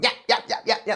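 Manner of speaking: hushed, breathy tiny yappy dog voice. Describing how a certain man sounds, in a yappy little dog voice. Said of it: "He just sounds like a little yappy dog".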